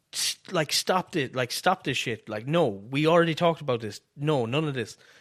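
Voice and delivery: ordinary talk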